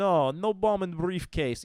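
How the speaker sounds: put-on Russian accent, very high and very loud. Showing an example of an accent impression, put-on russian accent. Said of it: "like if I want to do Russian, it's like".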